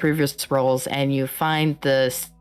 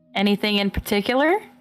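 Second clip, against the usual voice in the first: put-on southern accent, service-style voice, pitched up; 6 semitones higher than usual. Voicing a waitress taking an order at the table, in southern customer service voice. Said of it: "my customer service voice fucking goes southern".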